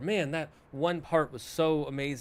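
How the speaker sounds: plain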